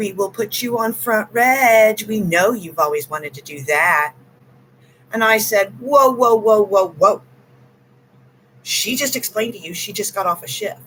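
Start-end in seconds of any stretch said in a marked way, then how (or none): 0.0-4.1 play-acted store manager tone of voice. Recounting being asked to work a shift, imitating the manager's tone. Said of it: "this is the tone of voice and the way she said it".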